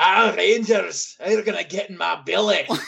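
put-on Scottish accent. Retelling how a guest sounded on the episode, Scottish accent like Fat Bastard. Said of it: "the Scottish accent".

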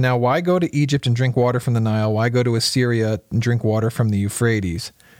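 ordinary talk

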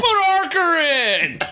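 high, slow, drawn-out mild mock yell. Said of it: "And he's screaming".

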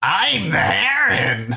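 very high, swooping heron-like bird voice. Giving the others the film experience: Robert Pattinson's Heron voice. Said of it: "my impression of Robert Pattinson's Heron voice".

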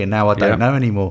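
ordinary delivery

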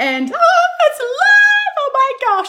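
high, loud, excited screaming. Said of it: "now I'm screaming".

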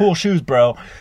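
very high, loud, half-joking, aggressive teasing tone. Retelling what a climber said to another: imitating a funny but aggressive tone. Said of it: "kind of funny, but kind of aggressive".

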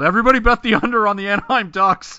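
shrill, high, full-volume megaphone yell. Imagining shouting a tip from a mountaintop: pretend yelling through a megaphone. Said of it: "with a megaphone and just yelled".

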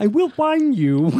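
high puppet voice. Describing a comedy bit, the speaker quotes it in Kermit the Frog voice. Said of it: "It is in the Kermit the Frog voice".

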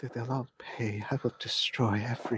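muttered under breath. A storyteller voices Will while a boy cries over a man on a table, muttering. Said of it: "you hear him muttering".

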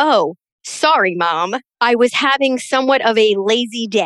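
dead serious, unbothered, matter-of-fact tone. Retelling a son's excuse for not helping: imitating son's straight-faced excuse. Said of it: "with a straight face".

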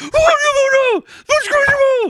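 very high-pitched, slow protesting delivery. Retelling a fight where Duckman held a plastic bat: imitating Duckman's protest. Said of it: "That's exactly how he sounded".

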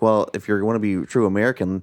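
usual speaking voice

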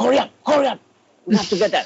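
urgent, rushed, very high-pitched. Retelling how dad, walking fast, urged him to school: imitating dad's hurrying voice. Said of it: "with that voice".

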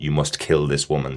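normal talking voice

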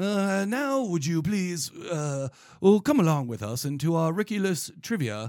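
put-on classy English accent. Host inviting the others to play trivia, in a classy English accent. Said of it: "I'm getting very classy".

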